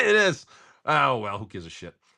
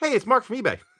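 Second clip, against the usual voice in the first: very high, upbeat, cheerful voice; 10 semitones higher than usual. Retelling how Mark from eBay greeted him, imitating Mark's upbeat voice. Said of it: "It was really uppity".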